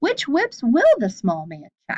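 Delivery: rising question intonation, lifting on "check". A teacher models reading a sentence aloud for students, reading as a question. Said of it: "We need to read this like a question".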